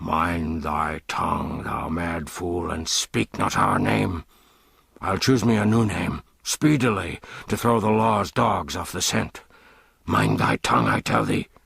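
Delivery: low-pitched, low voice. John Canty hurries the Prince along a dark way, cautioning him; low warning voice. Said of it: "giving him this caution in a low voice".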